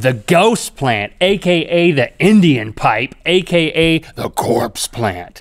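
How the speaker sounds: slow, eerie, spooky put-on voice. Reading out plant names, in a put-on spooky voice. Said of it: "because you say it in that voice".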